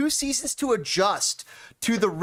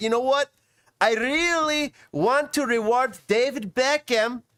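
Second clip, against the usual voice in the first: slow, high mock Russian accent. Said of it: "I'm giving him a Russian accent".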